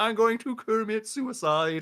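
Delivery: high, slow, drawn-out frog puppet voice. Retelling a funny video clip to friends: Kermit the Frog voice. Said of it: "He's like".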